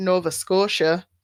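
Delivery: put-on Minnesotan regional accent. Reading out a man's service history, saying the place in a Minnesotan accent. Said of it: "I did Nova Scotia with a Minnesotan accent".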